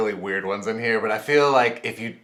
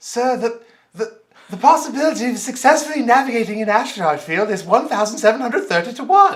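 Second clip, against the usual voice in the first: prim, fussy robot voice, very high and loud; 13 semitones higher, 7 dB louder than usual. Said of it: "say them in a C three P O accent".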